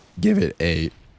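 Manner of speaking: voice cracks, breaking mid-phrase. Announcing a trick-shot attempt, the speaker's voice cracks. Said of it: "legendary voice crack there".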